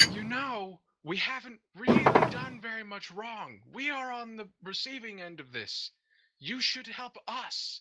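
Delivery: very high, loud shout, straining to sound friendly. Voicing Grogash trying to persuade Corey: Grogash shouting as friendly as he can. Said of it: "Grogash is going to shout, trying to be as friendly as he can".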